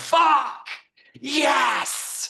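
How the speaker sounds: mock, shrill, very high, full-throated, top-of-lungs scream. Retelling sprinting down the hallway after a big payment: retelling a scream at top of lungs. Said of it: "I would scream at the top of my lungs".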